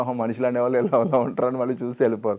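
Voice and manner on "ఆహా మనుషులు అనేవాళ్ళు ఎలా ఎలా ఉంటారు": plain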